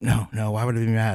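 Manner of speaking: put-on very sarcastic tone. Retelling a car ride when she asked if the speaker was mad: retelling a very sarcastic reply. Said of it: "very, very sarcastic".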